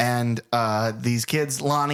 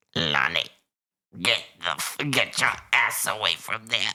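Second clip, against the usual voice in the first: put-on weird-accented thrown voice, much lower; 3 semitones lower than usual. Retelling a movie scene, a character calling out to Lonnie; Loomis impression, thrown voice. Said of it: "I'm going to try to do my best impression".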